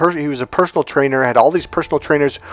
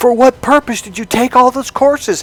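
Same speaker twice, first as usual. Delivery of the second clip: very high-pitched, loud, challenging screaming; 9 semitones higher, 4 dB louder than usual. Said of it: "and I scream".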